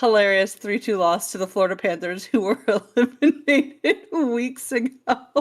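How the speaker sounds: laughing while talking. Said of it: "It's so funny".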